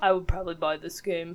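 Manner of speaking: barely-there enthusiasm, dull and muted. Imitating an absent friend's dull and muted excitement about a game. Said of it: "Is that how Dan sounds?".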